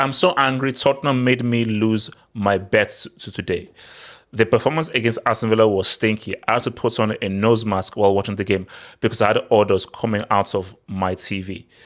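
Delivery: ordinary talk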